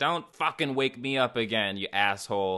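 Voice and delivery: ordinary talk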